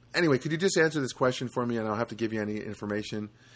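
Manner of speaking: ordinary delivery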